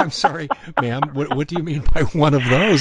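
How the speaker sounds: amused, chuckling. Retelling own reply to a rude stranger: retelling own chuckling reply. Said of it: "And I'm chuckling".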